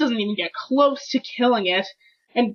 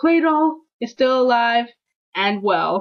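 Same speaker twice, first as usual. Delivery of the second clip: ordinary talk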